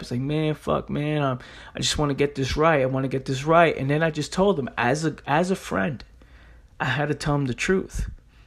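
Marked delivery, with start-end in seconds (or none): 0.2-3.8 put-on tearful, crying voice. Retelling a friend's words on the phone after he fucked up: imitating a friend crying. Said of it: "he was crying a little bit".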